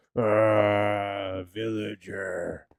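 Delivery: put-on zombie voice with long drawn-out ah. Explaining a game, the speaker voices what the zombie says: zombie voice. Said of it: "and then the zombie goes".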